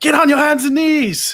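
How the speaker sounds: high, loud, desperate shout at full volume.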